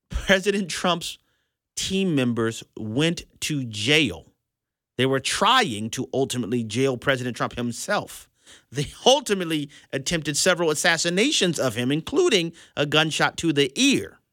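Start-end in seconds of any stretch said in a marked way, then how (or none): 0.1-4.2 very slow, with long pauses. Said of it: "I wanna say this very slowly".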